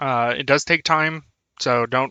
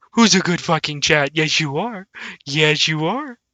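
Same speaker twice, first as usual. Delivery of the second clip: put-on doting, cooing, toddler-style baby talk; 2 semitones higher than usual. Talking to everybody in chat the same way: baby talk. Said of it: "Talk to you like I did with my, my toddler".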